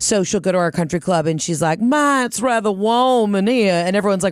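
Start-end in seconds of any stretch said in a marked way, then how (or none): 1.8-3.7 put-on Southern drawl, slow and high. Imitating mom at the country club: Robin's fake Southern accent. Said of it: "thinks that she has a Southern accent".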